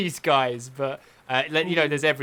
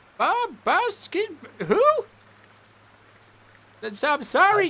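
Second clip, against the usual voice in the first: put-on old lady voice, much higher. Storyteller voicing an old lady whom the players asked for directions, old lady voice. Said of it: "this old lady ... and she's like".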